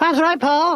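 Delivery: high ventriloquist dummy voice. In a ventriloquism routine, the dummy answers Paul in a Tonguey dummy voice. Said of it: "ventriloquism routine".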